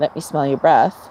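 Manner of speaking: normal talking voice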